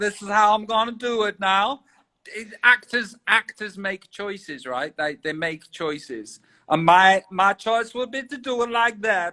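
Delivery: over-the-top comedy American accent. Showing the accent he would use for a film role, comedy american accent. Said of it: "That that that voice that I've done is obviously a comedy voice".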